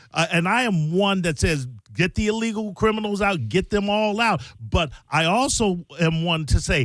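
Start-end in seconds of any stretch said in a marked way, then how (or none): none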